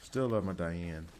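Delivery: strong, thick, laid-on Southern drawl. Praising a game character during play: strong southern accent. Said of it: "That was the most Southern I've sounded".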